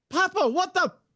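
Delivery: tiny, very high, squeaky chipmunk voice. Speaker joking that his chipmunk woke up and swore, really high chipmunk voice. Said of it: "it's in a really high voice".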